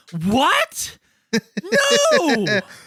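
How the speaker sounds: very high, swooping gasp with drawn-out end. Imitating an actor's movie performance: imitating Mark Wahlberg in The Happening. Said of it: "sub out every scene with me going like this".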